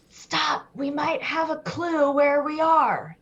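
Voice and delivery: high-pitched, theatrical stage whisper. Walking through a spooky wood, halting the group over a possible clue, in a stage whisper. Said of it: "Stage whisper".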